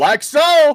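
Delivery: shrill, very high, very loud shout. Retelling what gets shouted after making a nice shot: imitating own shout. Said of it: "and I'll shout out".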